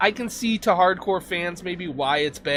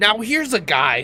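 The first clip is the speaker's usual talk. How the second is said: slow, unhurried, every word drawn out; 2 semitones higher than usual. Ranking fandoms, then doing a best Chris Collinsworth impression. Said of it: "in my best Chris, Chris Collinsworth impression".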